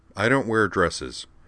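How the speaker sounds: plain reading voice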